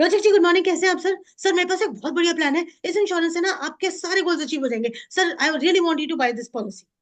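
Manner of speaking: high, fast, rattled-off salesman-style patter. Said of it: "इतने सारे words मैंने बोल दिए".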